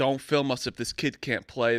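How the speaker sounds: plain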